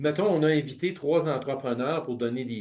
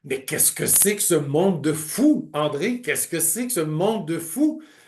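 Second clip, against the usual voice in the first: put-on, thick Belgian French accent; 3 dB louder than usual. Imitating someone who came back about his building, in a belgian french accent. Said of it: "avec son accent belge".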